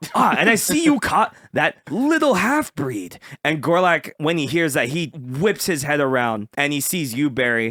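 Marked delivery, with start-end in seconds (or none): 0.1-3.2 high, swooping, sing-song put-on guard voice. Voicing a sergeant greeting the players, in an Oblivion guard voice. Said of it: "it's gonna be like Oblivion".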